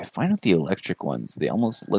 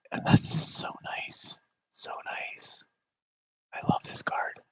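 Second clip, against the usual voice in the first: quiet, soft, breathy whisper. Talking about a Pokémon card collection, whispering. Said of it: "I don't know why I'm whispering".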